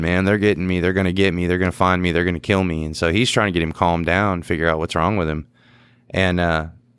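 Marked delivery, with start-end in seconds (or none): none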